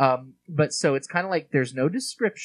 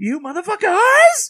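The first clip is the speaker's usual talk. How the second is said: shrill, very high, very loud scream at full blast; 10 dB louder than usual. Imitating an actor's line delivery from the movie: Nicolas Cage line delivery. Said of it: "line deliveries he gives in this movie".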